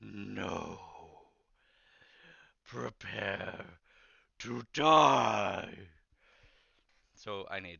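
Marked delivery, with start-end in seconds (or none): 0.0-5.9 very loud, very slow, rough, booming, ghastly groan. Game master voicing a wraith refusing the players' request, ghastly groaning wraith voice. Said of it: "You all hear a ghastly groan".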